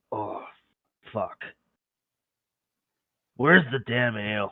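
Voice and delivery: muttering under breath. Voicing a hungover character looking for ale: muttering under his breath. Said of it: "under his breath, he's just like".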